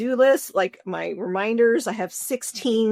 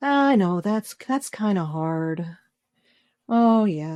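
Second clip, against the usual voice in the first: put-on voice of a woman; 3 semitones lower than usual. Imitating a woman from a show who talks like a sleep app voice: imitating Martha's voice. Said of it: "she just talks very, very, like, you know, just like this".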